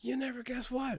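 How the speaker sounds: very high yell. Retelling a phone call from a buddy: imitating a friend yelling. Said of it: "why are you yelling at me?".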